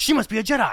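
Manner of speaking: paranoid, gasping delivery, high and loud.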